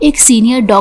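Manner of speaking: ordinary delivery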